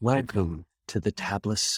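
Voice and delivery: rich, luxurious radio-style voice. Trying a best attempt at someone's luxurious radio voice, NPR radio voice. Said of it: "That's my best N P R voice".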